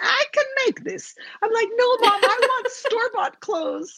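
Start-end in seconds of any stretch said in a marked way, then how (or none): 0.0-1.1 put-on Greek accent, pitched up. Recalling shopping trips with Mom, the speaker quotes her: imitating Mom's Greek accent. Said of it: "she would look at it in her Greek accent and go".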